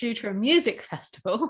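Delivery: ordinary delivery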